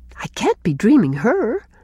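ordinary talk

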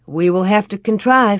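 plain reading voice

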